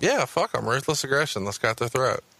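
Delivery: plain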